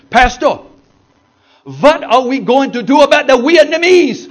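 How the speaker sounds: put-on shrill, loud, booming, high Pennsylvania Dutch accent. A pastor recounting a group questioning him behind a shut door, Pennsylvania Dutch accent. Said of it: "in their Pennsylvania Dutch accent".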